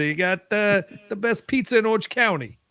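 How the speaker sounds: put-on New York accent. Asked to repeat a pizza recommendation in a New York accent: New York accent. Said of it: "but in more of a New York accent?".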